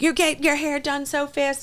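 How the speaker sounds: high, slow, irritated complaining voice. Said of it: "Lexi get, gets so irritated".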